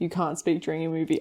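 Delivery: plain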